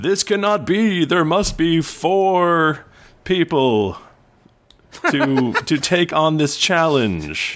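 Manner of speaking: booming leader voice. The commune's leader addresses everyone in the arena, booming leader voice. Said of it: "you hear a booming voice from the leader".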